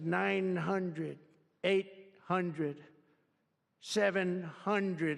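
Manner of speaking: slow, mechanical, robotic computer voice. Retelling a flight, the speaker imitates the plane's computer voice. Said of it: "the computer goes out, sounds like a, a, an intelligent individual".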